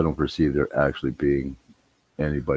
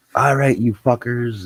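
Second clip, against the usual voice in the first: mock raging, furious, pitched-up cursing outburst; 9 semitones higher, 4 dB louder than usual. Retelling how she freaked out at the yelping dogs, mock furious outburst. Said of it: "she's just fucking freaking out on them".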